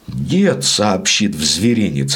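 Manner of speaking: ordinary delivery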